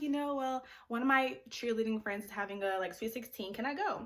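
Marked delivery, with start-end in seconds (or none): none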